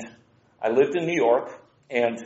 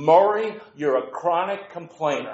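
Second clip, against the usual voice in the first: put-on Brooklyn accent with pitched-up voice; 5 semitones higher than usual. Retelling what his supervisor said after he complained, Brooklyn accent. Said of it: "in a Brooklyn accent".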